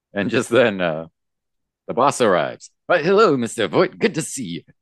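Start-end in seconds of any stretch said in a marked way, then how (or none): 2.9-4.6 put-on, pitched-up thirties gangster voice. Voicing a character greeting the arriving boss: put-on thirties gangster voice. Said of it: "I'll stop doing that now".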